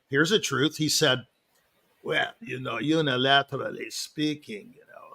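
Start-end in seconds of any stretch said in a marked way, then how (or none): 2.0-5.1 put-on accent from Israel. Imitating a man who came to hear the speaker play: Israeli accent. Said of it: "that's my imitation of him".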